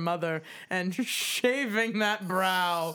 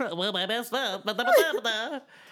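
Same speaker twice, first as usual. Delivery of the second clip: cartoon character voice with swooping pitch; 3 semitones higher than usual. Mocking how the other speaker imitated them: Porky Pig voice. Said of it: "Porky Pig voice".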